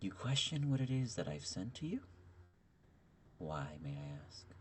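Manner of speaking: cold, chilly deity voice. Storyteller voicing a character right after describing the voice: soft, chilly voice. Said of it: "soft, chilly voice of a tone".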